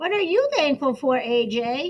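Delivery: plain reading voice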